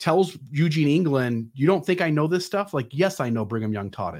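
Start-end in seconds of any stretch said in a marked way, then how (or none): 1.5-4.2 acted-out snide, snarky, scoffing know-it-all tone. Retelling what Bruce R. McConkie told Eugene England: imitating his snarky tone. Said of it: "in his snarky tone".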